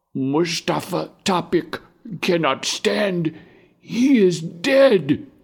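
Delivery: feeble, weak, very high-pitched voice. Answering the soldier who called fourteen names, in a weak voice. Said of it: "A weak voice calls out".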